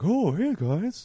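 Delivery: squeaky, very high pet-dog voice. Speaker demonstrates the voice used for their dog and father-in-law. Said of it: "the voice I use for my dog is the same voice I use for my father-in-law".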